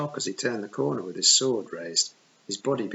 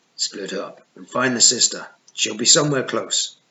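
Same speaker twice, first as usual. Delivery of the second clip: rough, gruff, loud, commanding voice; 7 dB louder than usual. In a story read aloud, an unseen pursuer around the corner gives orders in a gruff voice. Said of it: "a gruff voice said".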